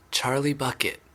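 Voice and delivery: timid, nervous, small half-whisper. Reading a story, the last guest gives their name: a small nervous half-whisper. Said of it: "a small nervous voice whispered".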